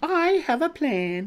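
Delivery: self-satisfied, smug and very high-pitched. Narrating a character insisting on joining in, then adding, smugly. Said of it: "she added quite smugly".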